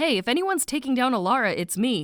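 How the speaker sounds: ordinary delivery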